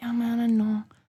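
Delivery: put-on Mexican accent. Retelling a story, voicing Pecos replying to a warning before surgery, Mexican accent. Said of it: "Pecos has a Mexican accent".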